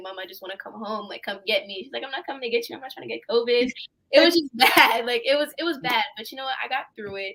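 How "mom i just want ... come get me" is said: put-on crying, much quieter. Retelling a call to mom during quarantine, imitating own past crying. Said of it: "I remember calling my mom crying".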